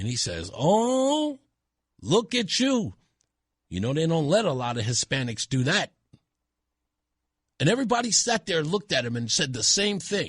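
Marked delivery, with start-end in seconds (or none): 0.5-5.9 put-on heavy, slow, thick Spanish accent laid on.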